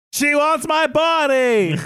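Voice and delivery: screaming in terror. Retelling a scene where a boy is dragged away: imitating a terrified scream. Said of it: "he screams".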